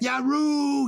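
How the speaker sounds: very high, loud, squealing schoolboy yelp. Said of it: "Whenever he was beaten on the backside".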